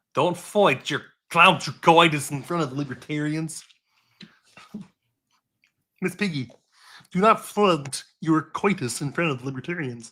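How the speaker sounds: slow, puppet-like delivery. Playfully addressing Miss Piggy in front of the libertarians, in a Kermit the Frog voice. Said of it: "You just sounded like Kermit the Frog".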